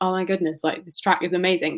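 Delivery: ordinary talk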